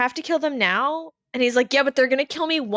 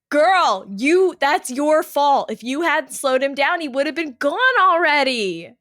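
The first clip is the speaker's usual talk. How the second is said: mock, put-on screaming; 2 semitones higher, 4 dB louder than usual. Retelling reacting to the ambulance scene, retelling own screaming at a character. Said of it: "screaming at that point".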